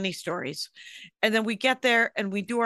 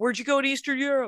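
put-on yelling at a higher pitch; 5 semitones higher than usual. Comedian recounting a set, quoting an audience member; retelling a heckler's yell. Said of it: "some guy yelled in the audience".

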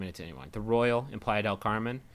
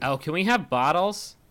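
cheesy, overdone, shrill, bad fake California accent; 7 semitones higher, 5 dB louder than usual. At a resort restaurant, asking for bottled water, in the shittiest California accent. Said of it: "the shittiest, like, California accent".

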